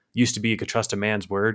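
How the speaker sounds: ordinary talk, nothing marked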